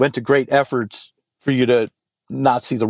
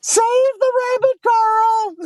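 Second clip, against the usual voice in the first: mock, very high, teasing, ribbing holler. Retelling how old friends tease by yelling: imitating friends yelling. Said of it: "by yelling".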